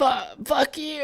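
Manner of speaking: play-acted, very high-pitched angry outburst, stuttering start. Retelling a girlfriend's reaction to being cut off while driving: imitating an angry outburst. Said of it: "why are you so pissed?".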